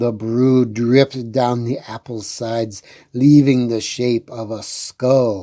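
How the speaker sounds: plain reading voice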